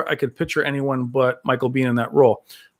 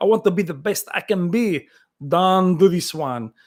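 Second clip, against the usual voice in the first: put-on heavy Belgian-French action-hero accent; 4 semitones higher than usual. Quoting a movie scene with a sweaty brother: Jean-Claude Van Damme accent. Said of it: "The way he spoke".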